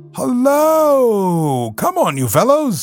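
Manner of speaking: calling out cheerfully. Narrating him calling out to a group on catching sight of them, a cheerful cry. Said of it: "he cried cheerfully".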